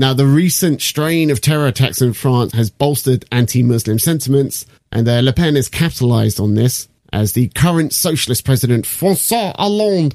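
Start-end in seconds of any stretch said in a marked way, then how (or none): 8.8-10.1 exaggerated, over-the-top French accent, pitched up. Saying a French name aloud in a dumb French accent.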